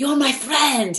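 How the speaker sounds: put-on French-accented girl's voice. Quoting a girl from a movie saying a line: French accent. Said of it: "in her French accent".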